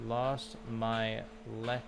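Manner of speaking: slow, syllable-by-syllable speech. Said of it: "Sound it out".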